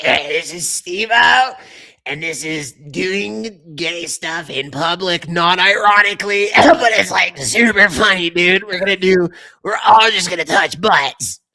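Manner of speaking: slow, drawn-out delivery, words stretched out. Doing the impression two friends share, give a Steve-O impression. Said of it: "you and Weck do the exact same perfect impression of that dude".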